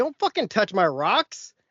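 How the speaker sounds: mock, loud hollered yell. Retelling a confrontation at the door: imitating own yell. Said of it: "such a silly sentence to yell".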